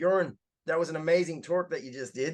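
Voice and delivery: put-on American accent, best attempt. Quoting a CEO who found you in the crowd after your talk, in a put-on American accent. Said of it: "That's my take on an American accent".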